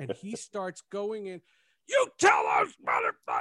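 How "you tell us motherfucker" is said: put-on, very high, shrieking, screaming yell. Retelling what a man screamed once he started going in, retelling a scream. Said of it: "And he's screaming".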